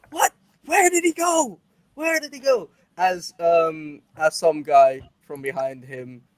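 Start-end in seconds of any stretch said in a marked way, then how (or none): 0.1-2.7 very high, shrill, frantic-sounding yelling, acted out. Voicing a bar patron who starts yelling for someone who vanished: yelling. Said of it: "just starts yelling".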